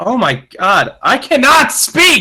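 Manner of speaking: very high, climbing, exasperated, frustrated outburst. Stumbling over reading a news line aloud, getting angry. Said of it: "I'm getting angry".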